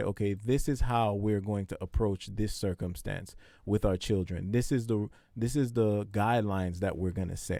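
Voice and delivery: ordinary talk, nothing marked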